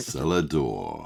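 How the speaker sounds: slow, smooth, silky British ASMR voice. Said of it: "could you say cellar door?".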